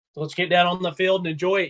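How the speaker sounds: normal talking voice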